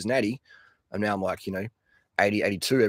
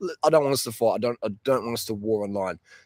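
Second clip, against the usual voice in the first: normal talking voice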